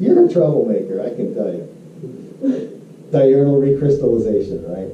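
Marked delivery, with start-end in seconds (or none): 0.0-1.7 playful teasing with swooping sing-song. Speaker calls out a listener who keeps laughing, teasing. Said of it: "I'm teasing you".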